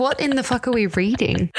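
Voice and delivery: ordinary talk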